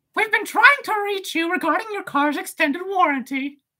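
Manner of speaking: squeaky voice, way up high. Asked to say a line as Mickey, the speaker does a Mickey Mouse voice. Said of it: "Say this as Mickey's".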